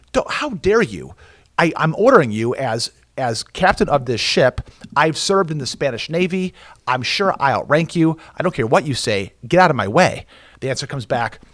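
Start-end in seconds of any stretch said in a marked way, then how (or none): none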